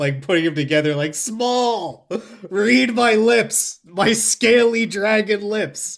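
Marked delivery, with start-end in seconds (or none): 1.1-6.0 high, very slow, drawn-out yelling. Playing a character yelling at DiCaprio to get small: yelling as Rex. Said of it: "start yelling".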